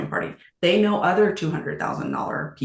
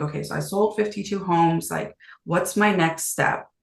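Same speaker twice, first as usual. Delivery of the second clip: ordinary talk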